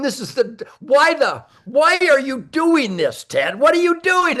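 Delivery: high, talking through laughter. Retelling dragging a deer in horrible pain: retelling own words while laughing. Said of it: "and I'm laughing, going".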